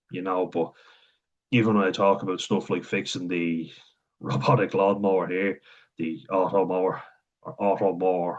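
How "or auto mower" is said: Irish Wexford accent. Saying the lawnmower's name the way the locals say it, Wexford accent. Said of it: "the Wexford accent".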